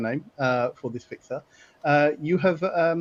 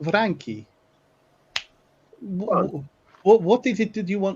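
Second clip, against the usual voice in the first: put-on English with a Russian-sounding accent slipping in; 4 semitones higher than usual. Voicing a warehouse middleman asking frankie what he wants: russian accent. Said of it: "I've gone Russian there".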